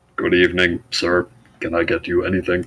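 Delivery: put-on, flat, mechanical, robotic droid voice. Narrating a scene, voicing a droid who greets you, in robotic droid voice. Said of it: "he says in his droid voice".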